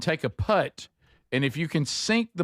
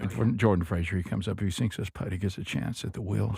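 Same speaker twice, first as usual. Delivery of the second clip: very low golf broadcast commentator voice; 9 semitones lower, 4 dB quieter than usual. Calling a player's putt after a co-host asks for his golf voice. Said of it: "Your golf voice".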